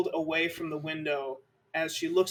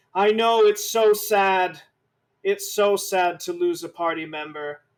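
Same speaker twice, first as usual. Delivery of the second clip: very loud, slow delivery projected to fill room; 2 semitones higher, 7 dB louder than usual. Voicing a character who hugs a player and says it: saying it very loudly. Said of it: "she says very loudly".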